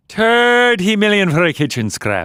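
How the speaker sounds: exaggerated Irish accent, pitched very high. Asked by another speaker to say it as Irish as possible, exaggerated Irish accent. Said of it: "say it as Irish as you can".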